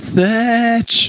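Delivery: high, carrying yell, calling out. Game master voicing a player's character searching for a missing companion, yelling out. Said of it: "You're just yelling out".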